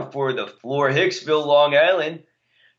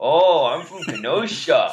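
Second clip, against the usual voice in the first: put-on Kenosha local accent. Asked on the spot by a friend to do a Kenosha accent. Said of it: "Do a Kenosha accent".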